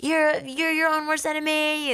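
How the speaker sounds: high, pumped-up, mock motivating yell.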